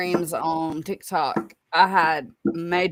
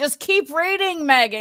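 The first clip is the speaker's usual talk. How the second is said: put-on yelling, higher pitch; 10 semitones higher than usual. Retelling yelling at the TV during a reading: retelling screaming at the TV. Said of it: "I was literally screaming at the T V".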